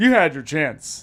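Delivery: loud, put-on refusing tone. Repeating another speaker's reply to the others, imitating Jason's tone. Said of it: "Do you guys hear that tone?".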